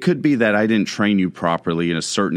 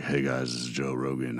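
put-on silky smooth voice, lower and quieter; 7 semitones lower, 11 dB quieter than usual. Imitating a podcaster who uses the same microphone: silky smooth Joe Rogan voice. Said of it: "silky smooth when you're listening to him".

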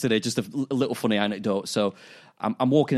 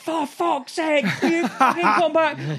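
acted scream, much higher pitch; 4 dB louder than usual. Retelling yelling at a dog off the lead, reenacting the scream. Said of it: "I'm screaming at her".

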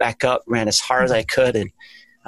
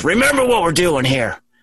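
put-on yelling, higher pitch; 6 semitones higher than usual. Quoting what the coach yelled across the line, retelling a coach's yell. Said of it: "And my coach yells across the line".

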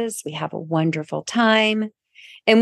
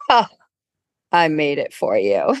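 put-on smug, self-satisfied, low-pitched voice; 4 semitones lower than usual. Retelling what a handsome man said before walking away, imitating a smug reply.

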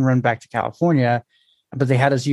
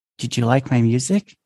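whispering. Telling a story of hearing a voice after the music suddenly stops, whispered. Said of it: "you hear a whisper".

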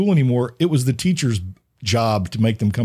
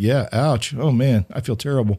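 ordinary talk

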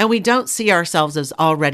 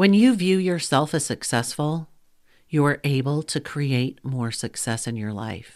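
very slow, deliberate, each word spaced out; 2 semitones lower, 5 dB quieter than usual. Podcast host makes a key point to coaches listening, really slow. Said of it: "I'm going to say this really slow".

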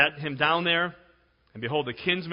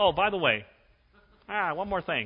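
offhand, casual TV detective delivery; 3 semitones higher than usual. Recalling how Columbo walks over with an afterthought: Columbo impression. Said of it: "You remember Columbo? Where he walks over and says".

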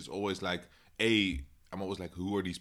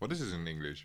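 soft speech through a mouthful, chewing while talking; 3 semitones lower, 5 dB quieter than usual. Eating during the conversation and asking a question, talking with mouth full. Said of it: "I'm sorry, I'm eating".

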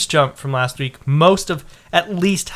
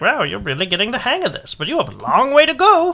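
pitch raised, tune swinging up and down; 8 semitones higher than usual. Reporting Pokédex progress to a friend, the speaker answers in a Professor Oak impression. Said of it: "you sound like Oak".

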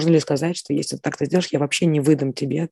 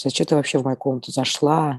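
normal talking voice

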